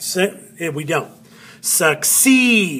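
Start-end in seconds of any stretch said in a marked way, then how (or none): 1.6-2.8 succeed stressed on second syllable CEED. Showing learners where the accent falls: stress on CEED. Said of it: "You hear it?".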